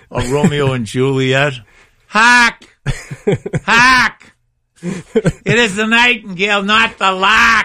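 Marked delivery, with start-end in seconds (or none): 2.0-7.6 put-on very high, slow, drawn-out Boston accent. Speaker recalls performing Romeo and Juliet on stage, in a Boston accent. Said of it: "So I had that Boston accent".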